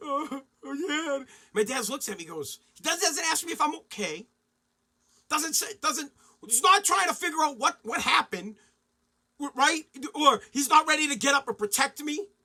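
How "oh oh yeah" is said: teary whimpering through the crying. Retelling coming home beaten up to his dad: imitating his past whimpering. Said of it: "like a bitch".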